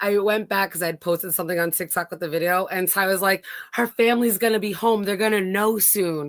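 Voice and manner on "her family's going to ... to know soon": plain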